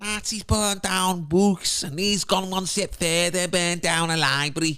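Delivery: Scouse accent. Speaker mocks news coverage, quoting an imagined bystander in a Liverpool accent. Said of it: "have somebody in a Liverpool accent be like".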